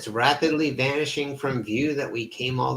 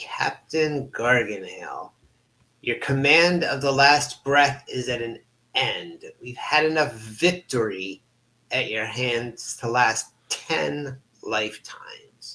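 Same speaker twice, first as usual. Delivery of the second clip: heavy, mocking, sarcastic delivery. Voicing a possessed creature addressing the captain: voice dripping with sarcasm. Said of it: "In a voice dripping with sarcasm".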